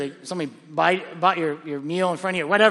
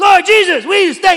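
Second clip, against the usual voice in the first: shrill, booming, very loud, high shouting at full volume; 13 semitones higher, 12 dB louder than usual. Retelling a friend's early-morning prayer: imitating someone shouting a prayer. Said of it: "he's, like, shouting".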